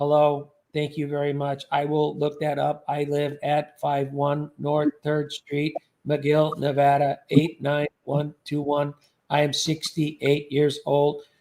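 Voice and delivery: monotone, no inflection. Showing the monotone bit he used talking to these fools, flat monotone voice. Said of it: "I came up with this monotone mic".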